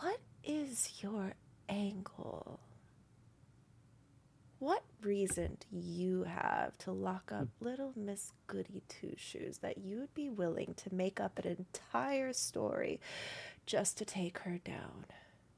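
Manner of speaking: quiet hushed voice. In a role-play scene, a character confronts another character: lowered voice. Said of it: "she lowers her voice".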